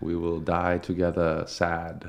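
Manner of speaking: put-on Japanese accent, spoken very slowly.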